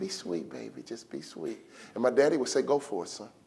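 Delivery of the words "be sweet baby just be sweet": put-on hushed, near-whispered, little kindergarten child voice. Retelling what his mother said each time he left the house, little kindergarten voice. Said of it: "little kindergarten voice".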